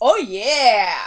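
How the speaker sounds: loud, eager, energetic, hyped-up drawn-out yeah. Answering a question about this week's show: sounding hyped up. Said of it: "you sound like you might have taken an upper".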